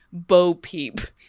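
play-acted, utterly serious, solemn delivery. Speaker quotes an actress introducing herself, mock-serious tone. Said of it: "in the most serious of tones".

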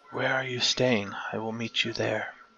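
secretive, hushed, quiet half-whisper under the breath. Voicing a character who asks where someone is staying: half-whispering quietly. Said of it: "she whispers quietly".

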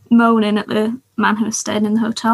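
plain

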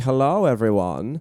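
put-on fake European accent. Retelling how a cousin came back from Europe: imitating a fake European accent. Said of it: "She has a fake accent".

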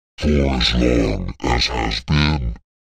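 put-on dry, ancient-sounding old voice, close in the ear. Voicing a voice that speaks in a player's ear: a dry, ancient voice. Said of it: "The dry, ancient voice in your ear says".

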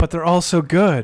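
sarcastic, mocking tone. Answering another speaker about buying single cards: sarcastic. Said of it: "I'm being sarcastic".

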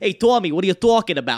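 strong, heavy New York accent. Telling listeners not to expect heavy accents in the script: full-on New York accent. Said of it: "So don't expect full-on that".

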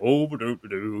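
put-on storybook cartoon character voice. Voicing a creature who talks to the players: Eeyore voice. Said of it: "He kinda sounds a little bit like Eeyore".

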